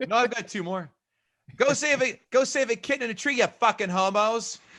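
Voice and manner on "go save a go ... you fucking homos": Boston accent, pitched high. Reading out a favorite quote: Boston accent like Bill Burr. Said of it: "every Boston accent I'm gonna do is going to sound exactly like Bill Burr".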